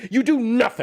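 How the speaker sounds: high, loud yelling. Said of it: "such a weird thing to yell at somebody".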